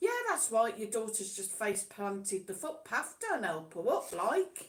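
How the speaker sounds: quite sarcastic, swooping sing-song delivery. Retelling a remark about parents not helping their fallen daughter: retelling a sarcastic remark. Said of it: "I said to Marcus quite sarcastically".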